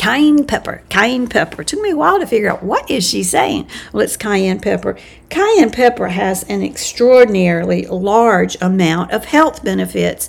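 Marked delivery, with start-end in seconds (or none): 0.0-1.6 put-on Australian accent. A speaker quoting a woman who often talks about cayenne pepper, in her accent. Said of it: "And in her accent".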